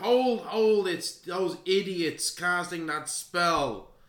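high, drawn-out, loud shout. Voicing a leader stopping druids from casting spells: shouting. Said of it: "And he shouts out".

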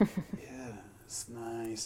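eerie, unsettling, creepy tone. Showing how to talk to a dog on a leash: creepy voice. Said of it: "without the creepy voice".

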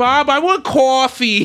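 put-on heavy Rhode Island accent, high and slow. Describing a cartoon wife's accent, imitating Linda from Bob's Burgers. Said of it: "the super heavy accent of like Rhode Island".

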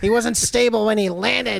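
put-on loud, sore-loser complaining in a New York accent. Retelling how Seth reacted, mad that Joe Asa beat him; Seth Rollins impression. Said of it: "your impression of Seth Rollins has like a little Joe Pesci in it".

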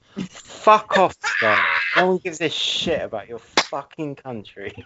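put-on tough London accent, forceful and barked out. During an argument about Christmas films, telling Scott off in a Danny Dyer impression. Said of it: "is he Danny Dyer now?".

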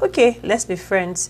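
normal talking voice

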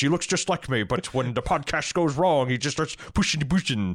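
rattled-off synthetic hologram delivery.

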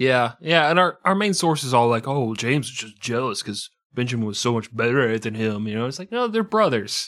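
ordinary delivery

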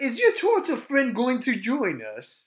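uppity, haughty voice, high-pitched, swooping and sing-song. A narrator describing characters the group has met, in an uppity Bolo voice. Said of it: "Bolo is like more like a little uppity".

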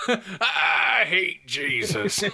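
rough, raspy, growling cartoon cowboy voice. Imagining a man's remark said in Yosemite Sam's voice: Yosemite Sam voice. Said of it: "in Yosemite Sam's voice".

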